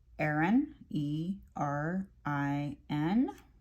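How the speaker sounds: very slow, machine-like, robotic delivery. Spelling out a name letter by letter, with a robotic delivery. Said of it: "Sorry if I sounded like a robot at that moment".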